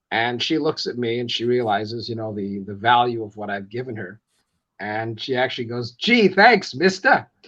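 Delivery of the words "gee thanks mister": put-on loud New York accent, pitched up. Retelling what a woman said after being handed tickets, in a new york accent. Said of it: "just hearing that with a New York accent".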